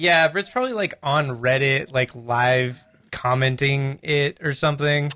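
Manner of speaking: plain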